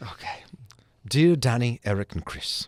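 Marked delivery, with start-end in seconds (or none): 1.1-2.7 slow, put-on British accent. Podcast host reading a listener's Christmas letter aloud, in a British accent. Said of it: "Should I do it with a British accent?".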